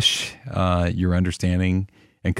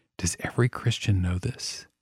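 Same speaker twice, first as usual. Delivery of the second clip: mock whisper, quieter; 8 dB quieter than usual. Retelling how a new believer leaned in and asked: imitating a whisper. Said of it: "he kind of whispered".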